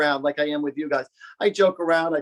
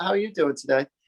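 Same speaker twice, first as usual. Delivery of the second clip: fake British accent, affected British-sounding voice; 4 semitones higher than usual. Retelling chatting with a restaurant waitress, in a put-on accent. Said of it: "oh my God, I love your accent".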